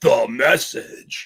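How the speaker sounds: low put-on barfly drinker voice. Discussing periodical publications, saying the phrase in a drinker voice. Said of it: "in my best drinker voice".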